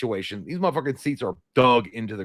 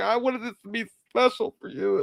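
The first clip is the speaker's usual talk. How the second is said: acted-out tearful crying voice, pitched very high; 10 semitones higher, 3 dB quieter than usual. Retelling what his wife said after she started crying: imitating someone crying. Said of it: "and then she started crying".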